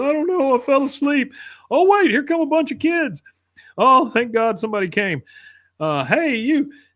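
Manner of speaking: tearful sobbing, very high-pitched.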